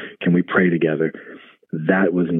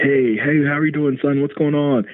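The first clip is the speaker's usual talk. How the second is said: very high, carefree, cheery, happy-go-lucky voice; 10 semitones higher than usual. Retelling how his father answered the phone, imitating a happy-go-lucky greeting. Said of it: "in his very happy-go-lucky um way".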